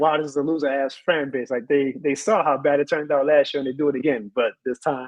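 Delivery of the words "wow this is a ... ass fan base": ordinary delivery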